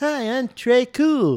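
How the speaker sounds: put-on high-pitched voice with a lisp. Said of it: "He'd be like".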